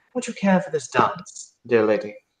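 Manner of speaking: very polite, courteous, courtly gentleman manner. A narrator voices a short figure bowing to a lady, in a very polite voice. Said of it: "in a very polite voice after bowing".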